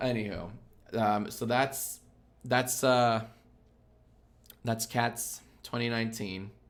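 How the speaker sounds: beaten-down, defeated, dejected tone. Wrapping up the talk about Cats twenty nineteen, sounding defeated. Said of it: "You sound so defeated".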